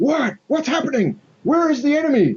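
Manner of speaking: startled, alarmed, very high-pitched voice. Voicing guardsmen bursting out of a guardhouse: alarmed guardsman. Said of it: "some guardsmen burst out".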